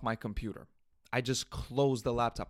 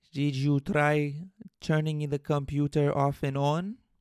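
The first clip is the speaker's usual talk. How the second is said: mock Mexican accent; 3 semitones higher, 5 dB louder than usual. Retelling what a man said while checking his settings, in a stereotypical Mexican accent. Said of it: "in his most stereotypical Mexican accent".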